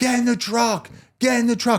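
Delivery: very high, idiotic-sounding screeching. Retelling a coworker screaming during a shooting: imitating someone screaming. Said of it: "I hear him screaming like a fucking idiot".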